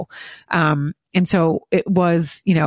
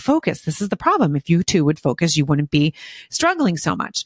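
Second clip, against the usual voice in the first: ordinary talk, nothing marked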